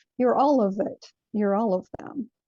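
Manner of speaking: ordinary talk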